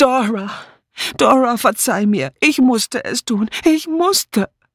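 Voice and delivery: anguished, desperate, high, drawn-out scream. In the kitchen, a woman cries out to the absent Dora, screaming in despair. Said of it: "Sie schrie".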